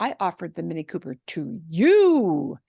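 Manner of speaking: emphasis landing on "to you". Showing how English uses voice inflection, stress on to you. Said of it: "here's what we do with our voice in English. We do a to you. We we do inflection with our voice".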